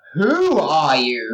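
slow, wide-pitched, stretched-out predatory purr.

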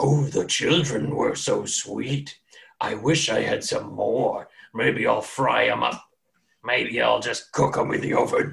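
rough, barking giant voice. Narrating a scene to players, voicing a giant in the common tongue, barking giant voice. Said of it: "it barks out a couple times".

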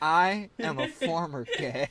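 exaggerated flamboyant voice, drawn out.

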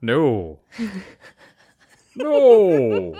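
loud, sing-song, swooping, drawn-out no. Joking with co-hosts, the speaker answers in a Santa voice. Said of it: "That's my Santa voice".

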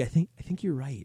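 put-on whispered voice. Recounting how the woman he leaned over to agreed, retelling a whisper. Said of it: "She like whispered".

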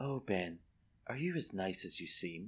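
put-on breathy little whisper. Retelling a film scene, quoting her line: imitating a breathy little whisper. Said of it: "in a breathy little whisper".

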